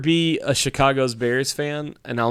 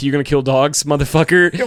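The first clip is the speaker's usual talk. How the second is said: put-on taunting coach voice, louder; 5 dB louder than usual. Retelling what a coach meant by the play: imitating a coach taunting. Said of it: "that was a coach saying, like".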